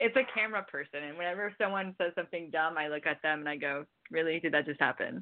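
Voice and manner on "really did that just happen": put-on flat deadpan, much lower pitch. Speaker acting out a look at an imaginary camera person after something dumb, acting out deadpan to camera. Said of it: "Like deadpan to the camera".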